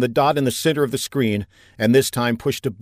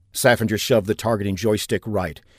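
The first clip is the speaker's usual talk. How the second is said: ordinary delivery, nothing marked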